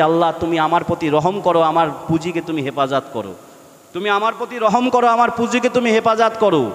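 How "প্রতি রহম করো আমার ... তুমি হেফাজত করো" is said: normal talking voice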